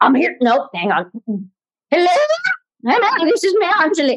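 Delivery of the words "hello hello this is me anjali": very high, pitched-way-up character voice. Greeting podcast listeners as a joke: Julia Child voice. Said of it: "No, this is Julia Child".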